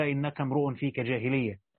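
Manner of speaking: plain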